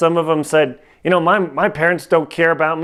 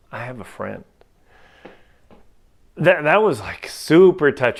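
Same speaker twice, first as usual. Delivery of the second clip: touched, moved, emotional voice with feelings welling up; 3 semitones lower than usual. Telling listeners about a touching moment with kids: getting emotional. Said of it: "Sorry, getting all emotional here".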